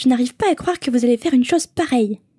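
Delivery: sharp, cutting, reproachful tone, each word clipped. Reading the story aloud, the narrator voices the girl's line as Hermione. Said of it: "C'est ton imitation d'Hermione".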